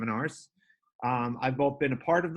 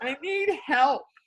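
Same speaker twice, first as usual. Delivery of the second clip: put-on very high, tearful, crying little kid voice; 13 semitones higher, 4 dB louder than usual. Retelling what a son said at the back door: imitating a crying child. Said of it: "he's at the back door crying".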